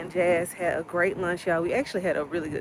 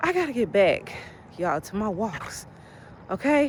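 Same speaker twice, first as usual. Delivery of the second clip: out of breath, puffing, winded voice; 3 semitones higher than usual. Chatting with viewers about getting back to walks, out of breath. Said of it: "Because I'm out of breath".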